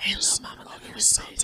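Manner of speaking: soft, breathy whispered murmur, close to the ear. Retelling what a partner said into one's ear: imitating someone whispering. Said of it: "he was trying to whisper in my ear".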